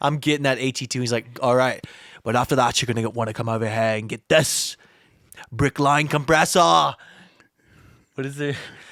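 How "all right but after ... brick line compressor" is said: strong, put-on Australian accent. Quoting what the designer said to him, put-on Australian accent. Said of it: "that's very very Australian".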